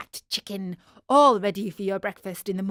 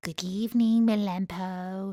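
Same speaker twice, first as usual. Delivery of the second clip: sweet, honeyed, gentle voice; 3 dB quieter than usual. One of them leaves her companions and goes to the doghouse door, in a sweet voice. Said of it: "said in a sweet voice".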